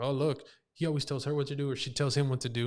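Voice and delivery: ordinary talk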